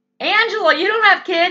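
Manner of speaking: high, loud, mocking ranting voice. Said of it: "The Democrats say".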